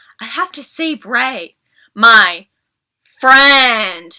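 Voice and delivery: emphasis on friend. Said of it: "Finn would always emphasize".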